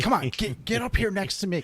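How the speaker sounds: curt snapping tone. Retelling snapping at a hunting partner to come over: retelling snapping at someone. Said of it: "snapping at him".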